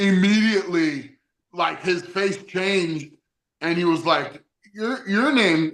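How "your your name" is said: mimicked stuttering, raised pitch. Retelling how a performer on stage reacted: imitating a stutter. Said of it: "he stuttered like that".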